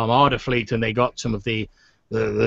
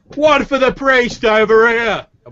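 loud bellow, very high, slow and drawn out; 12 semitones higher, 6 dB louder than usual. Retelling a man calling out to the guy dishing out the booze, in a loud bellowing voice. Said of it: "In like a loud bellowing voice".

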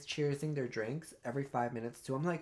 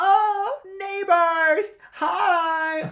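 put-on shrill, very loud, high drunken shout; 15 dB louder than usual. Retelling how a late, hammered man greeted them in the theater: imitating a drunk man. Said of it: "this man walks in and he goes".

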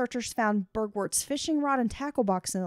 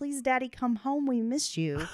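mock childlike pleading voice. Retelling what the missing man's kids said to him: imitating kids pleading.

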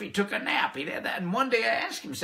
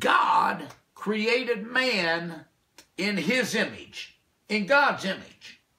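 very slow, deliberate, drawn-out reading. Speaker addresses listeners, saying it really slowly for them. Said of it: "I want to say it really slowly for you".

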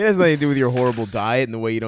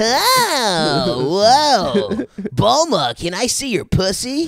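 very high aroused voice with a stretched "oh"; 10 semitones higher, 4 dB louder than usual. Doing a requested bit about the anime hero asking Bulma: horny Goku voice. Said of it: "Stav does horny Goku really good".

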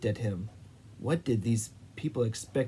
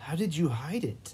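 impatient, pressing, pitched up; 5 semitones higher than usual. Narrator reads a character repeating his question, impatient. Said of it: "Ivan said impatiently".

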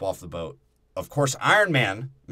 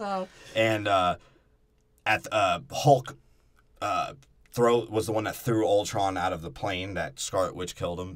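ordinary delivery

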